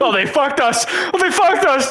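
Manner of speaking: panic and anger boiling over, high and rising. Repeating the other person's earlier outburst back to them, re-enacting panic and anger. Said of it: "the sheer amount of panic and anger in your voice".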